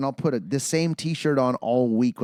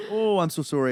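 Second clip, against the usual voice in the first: heavily exaggerated, clichéd Canadian accent; 4 semitones higher than usual. Imitating a coworker who talks in a stereotypical Canadian accent. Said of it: "almost like that stereotypical Canadian accent".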